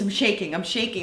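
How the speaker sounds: ordinary talk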